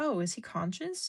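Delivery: calm, cool, collected, unbothered delivery. Retelling a stranger at the post office on the phone: imitating a calm question. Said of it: "very, like, um, calmly excused herself".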